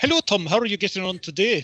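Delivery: deliberately bad, awful pseudo-Scottish accent. Recalling office impressions of a colleague, the speaker does an awful Scottish Willard impression. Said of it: "in our best pseudo awful Scottish accents".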